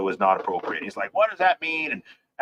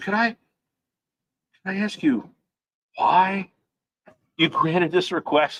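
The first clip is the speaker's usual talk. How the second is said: acted, high, puzzled and perplexed voice; 8 semitones higher than usual. Retelling a court story, speaker quotes the prosecutor asking the judge, imitating perplexity. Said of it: "You can just hear the the perplexity in his voice".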